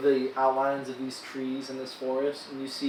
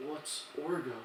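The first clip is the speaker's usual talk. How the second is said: orc character voice; 8 dB quieter than usual. Voicing an orc who asks a question: orc voice. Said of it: "you just hear the orc go".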